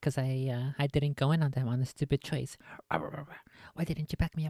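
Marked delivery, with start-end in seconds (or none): 2.9-4.5 mock-angry teammate voice. Describing a league teammate's complaint, imitating an angry teammate. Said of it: "When they're angry at me".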